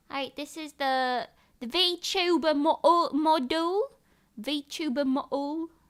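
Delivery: bad, fake British accent. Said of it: "sorry for all British people who have to hear me mock your existence".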